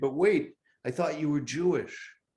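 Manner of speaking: ironic, needling, sarcastic disbelief. Retelling what is said to Democratic-supporting friends: imitating his own sarcastic remark. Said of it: "sort of sarcastically".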